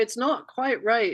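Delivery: put-on English accent. Quoting a former boss who used to say this, in his English accent. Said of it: "in his English accent".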